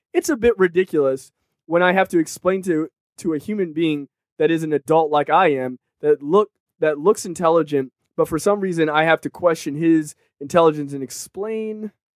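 normal talking voice

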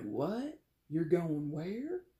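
put-on Southern drawl, very badly done. Acting out a relative reacting to a family move: bad Southern accent. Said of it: "my very bad Southern accent".

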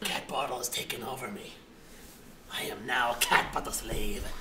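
very deep, very low, droning possessed voice. Acting as if taken over by a cat: acting possessed. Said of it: "Get out of my friend".

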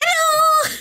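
very high, shrill, loud belted character voice. Imitating the character Foxy from the game: Foxy voice. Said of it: "Foxy was like this".

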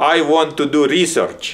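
put-on loud, high-pitched Russian-accented English. Retelling what he told the department chair, in a Russian accent. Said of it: "this is a Russian accent".

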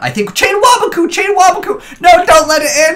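loud high-pitched yelling.

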